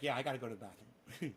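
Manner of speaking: talking in a dog voice, plain delivery. Voicing a pet dog who says it needs the bathroom: voicing the dog. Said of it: "He's like".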